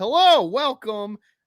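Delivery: all-out, loud, high, excited, energized screaming. Welcoming everyone at the start, with excited screaming. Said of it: "Sorry if I'm screaming. I'm excited".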